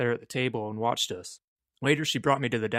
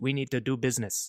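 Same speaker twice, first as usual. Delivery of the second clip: put-on heavy Korean accent. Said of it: "She had a very heavy Korean accent".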